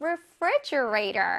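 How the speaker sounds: refrigerator stretched out slowly, syllable by syllable.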